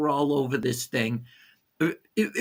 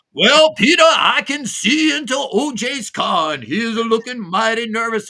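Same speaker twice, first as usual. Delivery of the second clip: loud, high, blustery southern drawl, hollered; 8 semitones higher, 6 dB louder than usual. Retelling a neighbor's call-in to a TV network, weird Foghorn Leghorn voice. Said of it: "calls in with this weird, foghorn leghorn voice".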